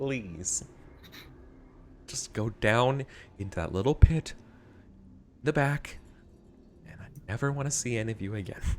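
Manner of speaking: exasperated, pained tone. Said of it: "doing that sort of, like, "I have a migraine."".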